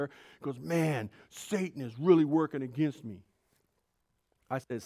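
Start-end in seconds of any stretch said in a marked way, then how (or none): 0.6-3.2 put-on angry tone. Retelling a friend's phone call after an event: imitating an angry friend. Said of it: "He was so mad".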